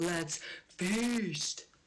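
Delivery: put-on scream, top of lungs but contained. Retelling a date's dad sitting down to tacos: imitating someone screaming. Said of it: "he just screams at the top of his lungs".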